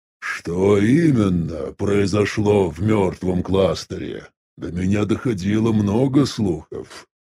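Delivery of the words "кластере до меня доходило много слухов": plain reading voice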